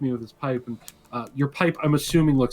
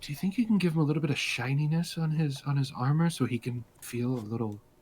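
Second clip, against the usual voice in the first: hushed, soft, close half-whisper; 6 dB quieter than usual. Leaning in to put a request to the listener, half-whispering. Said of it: "lean in and whisper to you".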